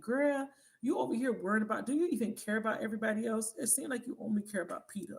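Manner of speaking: loud, fed-up, exasperated shouting yell. Retelling watching a movie she couldn't get into, imitating yelling at the TV. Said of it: "I kept yelling at the T V".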